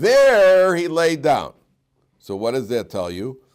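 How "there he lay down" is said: THERE stressed high, loud and slow. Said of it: "every single inflection".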